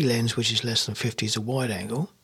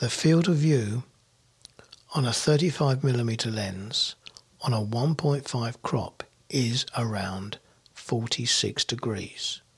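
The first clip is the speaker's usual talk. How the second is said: very slow, deliberate, word-by-word delivery. Explaining a lens's field of view to viewers, speaking deliberately very slowly. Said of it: "saying this as slowly as I can".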